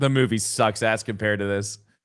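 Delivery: ordinary delivery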